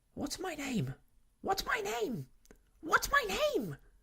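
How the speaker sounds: very high, shrill, anxious bird-call voice. Narrator reads the starling crying out to the child in the cot: shrill, anxious voice. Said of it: "cried the starling in a shrill, anxious voice".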